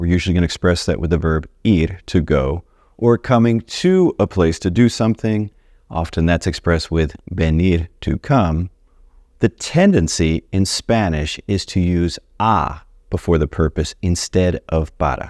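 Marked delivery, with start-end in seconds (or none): 9.4-15.3 slow, deliberate pace with carefully spaced words. Explaining a Spanish grammar point to learners, speaking slowly. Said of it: "See how slowly I said that?".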